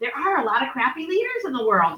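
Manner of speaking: very quiet, hushed, apologetic aside. Apologizing to everyone before a blunt remark about leaders: said very quietly. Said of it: "I'm gonna say it very quietly".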